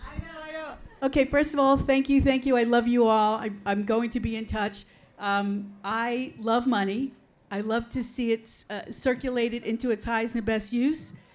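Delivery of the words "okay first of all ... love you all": projecting, louder voice. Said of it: "Maria, use your lung power".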